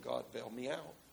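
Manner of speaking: low under-breath mutter. Storyteller voicing David praying while agreeing to help, retold muttering under his breath. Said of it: "While under his breath".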